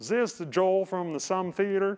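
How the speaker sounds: horrible, badly done fake Arkansas accent. Retelling a phone call from an Arkansas number, speaker does a horrible Arkansas accent. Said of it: "that's a horrible Arkansas accent".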